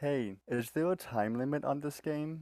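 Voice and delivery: soft, high half-whisper, close to the listener. Speaking in character into a camera orb: half-whispering. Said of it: "poke it and whisper".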